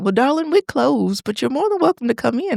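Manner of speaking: put-on Southern accent. Retelling what a woman said when they went inside, in a thick Southern accent. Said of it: "she was like very thick Southern accent".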